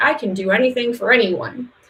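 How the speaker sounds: ordinary talk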